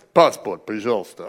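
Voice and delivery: very low, serious, stern official guard voice. Retelling Russian border guards asking for passports: imitating serious Russian guards. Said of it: "It's a serious knee quaking kind of".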